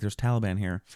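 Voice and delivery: ordinary talk, nothing marked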